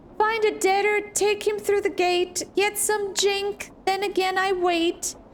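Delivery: high-pitched voice of a small video game character. Playing through a game, voicing a character's dialogue aloud in a high-pitched voice. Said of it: "the game specifically said it has a high pitched voice".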